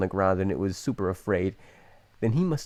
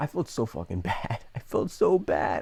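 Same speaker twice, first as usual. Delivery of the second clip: speech broken by laughter. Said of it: "I'm not laughing 'cause it's funny right now".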